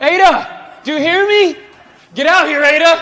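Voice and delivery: high, loud screaming. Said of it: "Why was this guy screaming?".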